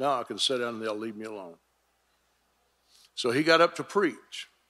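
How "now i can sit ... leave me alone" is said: lower, quieter muttered whisper under the breath. Retelling walking back across the platform: imitating a whisper under the breath. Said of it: "whispering under my breath".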